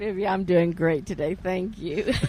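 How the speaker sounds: speaking with a laugh, laughing while talking. A woman, just asked how she is, replies laughing while talking. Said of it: "Why are you laughing?".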